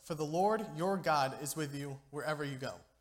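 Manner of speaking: ordinary talk, nothing marked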